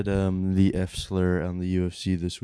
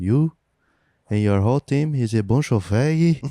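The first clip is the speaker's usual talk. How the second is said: put-on raised, pitched-up voice with Portuguese accent; 5 semitones higher, 5 dB louder than usual. Retelling a fighter's callout after a win: imitating a fighter's accent. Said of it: "he also had an accent which made it funny".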